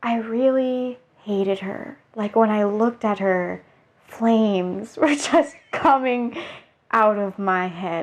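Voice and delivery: slow, dead calm monotone with no inflection. Retelling what a woman said about her jealousy, mimicking a flat monotone. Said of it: "like monotone voice".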